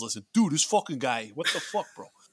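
Massachusetts accent. Voicing a Massachusetts guy for the massholes, in a Massachusetts accent. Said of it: "That's my boss guy".

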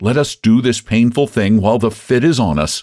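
plain reading voice

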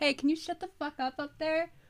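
irritated mom voice. Imagining a mom yelling up at a coughing kid: imitating an annoyed mom. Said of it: "your mom just goes".

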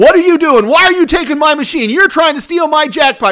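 very loud, very high, rapid, angry, accusing shout. Retelling how a woman at a slot machine yelled at the speaker, imitating a woman yelling. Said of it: "a woman is yelling at me".

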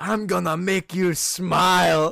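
put-on very slow, loud drunken holler, smiling, stretched. Retelling a movie scene where John yells across the pub: imitating John yelling drunk. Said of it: "yells across the, the pub and goes".

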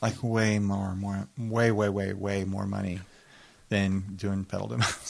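sounding sad. A podcast host compares wedding videography pay to doing pedal demos, sad. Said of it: "You sound really sad right now".

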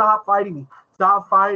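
pleading tone, repeated again and again. Retelling a movie fight scene: imitating someone pleading. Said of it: "pleading with Tony".

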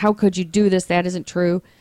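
plain

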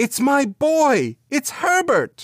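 very high, swooping, drawn-out outcry. Narrator reads a woman struggling against a man holding her arm; crying out while struggling. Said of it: "She cried".

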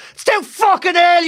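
scream toned down to a mild half-yell. Speaker retells screaming from the car at a man, retelling own scream. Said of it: "I screamed".

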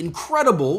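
mock yell, loud and high. Reading a message aloud where a word is in all caps: yelled word 'incredible'. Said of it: "that's why I had to yell it".

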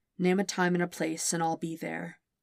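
ordinary delivery

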